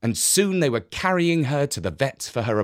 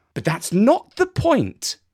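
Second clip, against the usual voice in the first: firm, resolute, insistent tone with raised pitch; 8 semitones higher, 4 dB louder than usual. Jessica replies to Jeff during the talk about the stray cat, firmly. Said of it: "said Jessica firmly".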